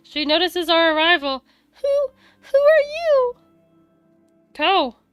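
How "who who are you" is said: put-on very high, childlike little girl voice. A girl of about seven notices the group arriving, in a high-pitched little girl voice. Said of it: "I'll just do high pitched voice".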